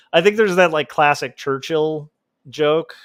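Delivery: ordinary delivery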